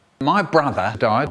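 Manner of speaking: plain reading voice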